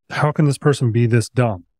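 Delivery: plain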